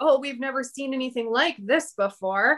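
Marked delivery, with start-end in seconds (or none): none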